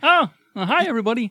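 high frog puppet voice. Asked to say hi as Kermit while listing the Muppet characters, Kermit the Frog voice. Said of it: "Say hi, Kermit".

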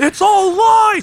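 very high, loud shrieking scream. Imagining a character wrecking magician shows, mock screaming. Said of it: "Just screaming".

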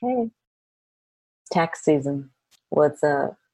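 slow, drawn-out, friendly, unthreatening voice. Acting out Uncle Sam knocking at the door at tax season: friendly, non-threatening Uncle Sam voice. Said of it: "You make it sound so non-threatening".

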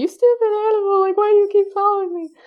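very high, loud crying wail, pleading tone. Retelling how a cat kept following them, acting out their own crying. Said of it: "And I'm like crying".

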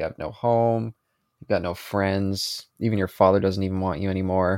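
usual speaking voice

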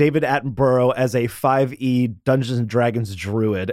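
ordinary talk

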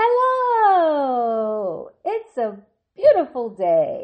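very slow, beaming, sing-song, said with a smile. Showing how your hello should sound, with a smiling voice. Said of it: "Could you hear my word smile when I said that?".

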